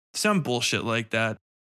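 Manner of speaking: plain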